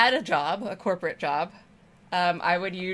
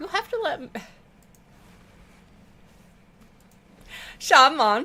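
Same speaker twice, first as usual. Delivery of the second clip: deliberately bad fake troll accent, loud and high; 9 semitones higher, 5 dB louder than usual. Speaker saying a line in troll style, bad troll accent. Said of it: "that's my bad troll accent".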